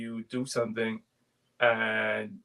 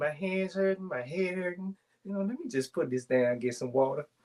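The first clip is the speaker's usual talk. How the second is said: put-on rural country accent, pitched up; 6 semitones higher than usual. Retelling what she said while crocheting, in a put-on country accent. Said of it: "Got the country accent".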